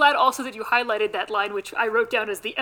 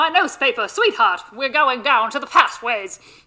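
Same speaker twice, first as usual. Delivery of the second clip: put-on louder old-timey radio voice; 3 semitones higher, 4 dB louder than usual. Asked to try an old-timey radio voice, doing a Katharine Hepburn voice. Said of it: "But the old-timey radio person".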